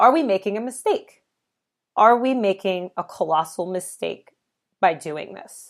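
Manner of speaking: voice catching, choked-up, emotional. Recalling a breakdown where she asked her husband: getting emotional. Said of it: "I'm gonna get emotional about it now".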